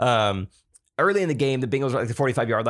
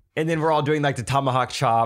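ordinary talk, nothing marked

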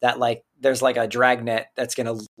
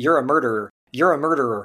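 usual speaking voice

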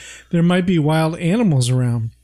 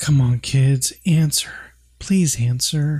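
put-on whisper; 3 semitones lower than usual. Retelling a scene where Carol, worried, calls for missing kids: imitating Carol whispering. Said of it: "they can't hear her when she whispers like that".

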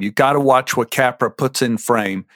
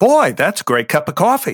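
head-centred character voice, pitched up; 5 semitones higher than usual. Showing different audition takes of one coffee line: as a head character. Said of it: "if you say it as a head character".

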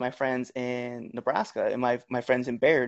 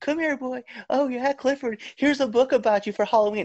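put-on very high, taunting, teasing kid voice; 12 semitones higher than usual. Retelling how kids teased about the nickname: imitating kids mocking. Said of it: "kids made fun of me all the time".

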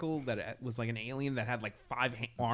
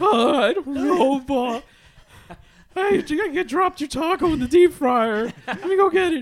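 put-on very high, very loud, shrill, squeaky teenager voice; 14 dB louder than usual. Teasing another speaker's voice, the speaker mimics the Simpsons teenager voice. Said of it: "like the teenager from The Simpsons".

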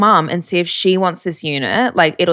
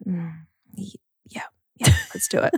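play-acted groggy, sleepy, half-awake voice; 9 dB quieter than usual. Retelling the mother's reply to a midnight call: imitating someone half asleep. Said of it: "literally half asleep".

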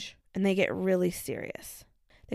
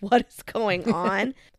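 put-on laughing while talking, louder; 5 dB louder than usual. Retelling how the dad reacted in a video: imitating someone laughing while talking. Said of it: "he's just kinda laughing".

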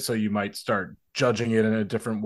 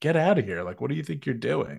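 put-on dry, unimpressed, deadpan delivery; 3 semitones higher than usual. Retelling how mourners answered a tour van driver: imitating a deadpan reply. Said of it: "looking at him deadpan".

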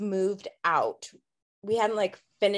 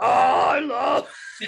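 put-on creepy deep voice, louder; 5 semitones higher, 6 dB louder than usual. Retelling how a family member sounded in a recording: imitating a deep creepy voice. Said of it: "but she was like".

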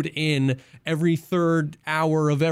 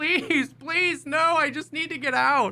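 mock very high, stretched-out, drawn-out yelling; 12 semitones higher than usual. Retelling a match, imitating a player they shot at: imitating someone yelling. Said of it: "he just started yelling".

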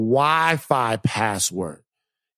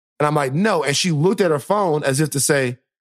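ordinary delivery

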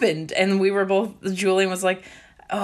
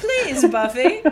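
put-on high young British boy voice, pleading; 5 semitones higher, 3 dB louder than usual. Joking about a young british boy character, speaker does his put-on begging voice. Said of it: "A young British boy begging for porridge".

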